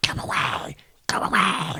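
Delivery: slow, hissed whisper under the breath. Acting out a creature's words from a story: Gollum-like hissing voice. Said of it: "is it too Gollum-y".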